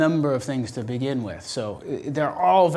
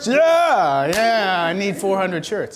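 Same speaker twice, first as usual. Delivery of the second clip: laughing while speaking, higher pitched; 5 semitones higher, 4 dB louder than usual. Replying during a group discussion, laughing.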